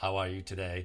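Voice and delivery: flat, level, machine-like robotic monotone. Showing how talking without variation sounds: flat robotic monotone. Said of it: "If I talk like this all the time, ... I'm gonna sound like a robot".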